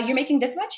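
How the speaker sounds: upward rising inflection landing on much. Showing how many people go up every time they speak: rising pitch on 'much'. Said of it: "go up every single time when you're speaking like this".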